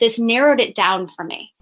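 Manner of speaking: usual speaking voice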